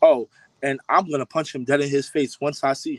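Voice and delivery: normal talking voice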